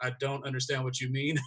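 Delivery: mock dry, flat, expressionless deadpan. Imitating a cast member's flat reaction: imitating Leah's deadpan delivery. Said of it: "that deadpan".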